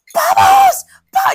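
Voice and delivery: very high, loud, excited cartoon fish shriek. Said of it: "that scene from Finding Nemo when he goes".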